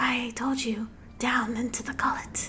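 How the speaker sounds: creepy, eerie, unsettling voice. A nameless voice tells a group to come down to it: creepy voice. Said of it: "Creepy voice".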